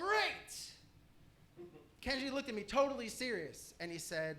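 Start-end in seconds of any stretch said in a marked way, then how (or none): 0.0-0.7 mock angry yell, higher. Retelling a student quoting an angry TV character: imitating an angry yell. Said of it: "he yelled".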